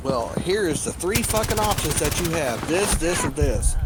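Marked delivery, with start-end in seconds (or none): none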